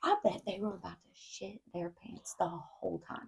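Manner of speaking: very soft, hushed whisper under the breath. Discussing kids who helped set up a case: whispering. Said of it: "I don't know why I whispered that".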